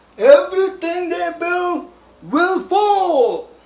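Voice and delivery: poor, shrill, high, loud voice with stretched fall. Opening a review with a poor imitation of Apocalypse. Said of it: "my poor imitation of Apocalypse".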